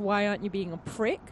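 plain

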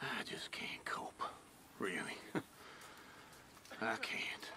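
low, whispered mumble.

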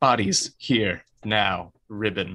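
every word drawn out and barked. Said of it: "Oh, that got really loud".

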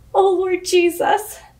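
crying out in fear, tearful and frightened. After a man limps away, a woman cries out, crying in fear. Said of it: "she cried".

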